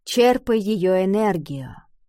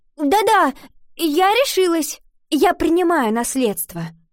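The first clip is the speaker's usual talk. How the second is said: high, prompt, hasty, eager; 8 semitones higher, 4 dB louder than usual. Iva answers the magic book that says it cannot hear her; hasty. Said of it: "поспешно ответила Ива".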